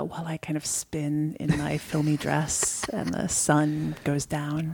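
whispered narration. Asked to whisper like a film voiceover, playing along: whispered voiceover. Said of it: "Shouldn't you be whispering this".

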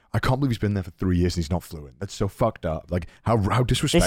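ordinary talk, nothing marked

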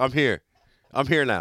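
ordinary delivery

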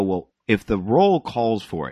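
normal talking voice

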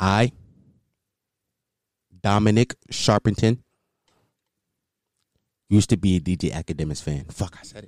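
deep, sultry, vulnerable voice. Confessing something to his audience, putting on a deep, sultry, vulnerable voice. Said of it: "I'm putting on my deep, sultry, vulnerable voice".

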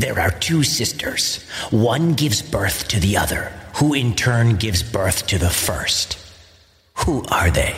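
snarled monster voice, every word snarled. Telling the Oedipus myth, the Sphinx poses its riddle in a snarling Sphinx voice. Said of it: "The Sphinx snarled".

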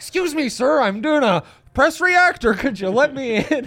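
bad, shrill, very high put-on voice. Imagining him asking people through a car window: bad Zach Stevens voice. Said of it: "It's a bad Zach Stevens voice".

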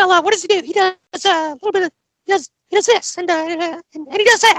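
put-on cartoon mouse voice. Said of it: "Sound like Mickey Mouse trying to be Butters".

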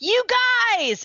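very high, excited, gushing squeal. Reading a listener's all-caps message aloud, reading with put-on excitement. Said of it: "I'm just trying to put that emotion into".

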